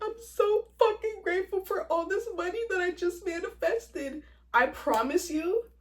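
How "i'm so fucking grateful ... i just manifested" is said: high, bawling, boo-hoo sobbing through tears. Showing listeners an example of what to do, boo-hoo crying. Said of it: "like boo-hoo crying, going like".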